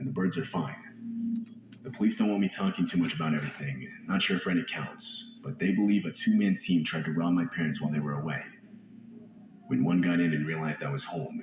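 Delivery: ordinary delivery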